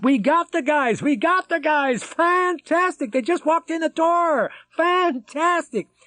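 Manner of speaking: shrill, very high-pitched bellowing shout. Reading a scene of a man shouting good news into a phone: bellowing. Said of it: "bellowing into the phone".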